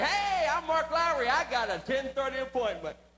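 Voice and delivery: loud, booming announcing voice. Retelling walking into the dentist's office: loudly announcing himself. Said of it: "pronounced loudly".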